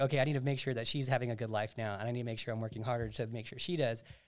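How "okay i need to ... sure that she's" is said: plain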